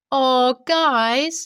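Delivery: put-on annoying tone. Retelling what the smug sister said: imitating an annoying tone. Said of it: "in the most annoying tone ever".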